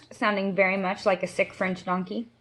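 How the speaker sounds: plain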